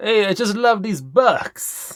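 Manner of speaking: slow, high, half-failed attempted Italian accent. Joking about loving the bucks in a game: attempted italian accent. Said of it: "I was trying for Italian, but didn't quite come across".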